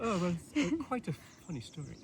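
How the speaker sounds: very high, sing-song, swooping put-on British accent. After announcing they'll put on an accent, answering a question: British accent. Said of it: "I'm gonna put on a British accent".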